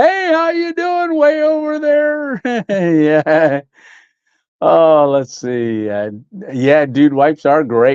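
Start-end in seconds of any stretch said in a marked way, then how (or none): 0.0-2.4 very high, loud yell carrying across distance. Speaker greets someone far away, mock yelling a greeting. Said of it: "I'm yelling like I said it real loud".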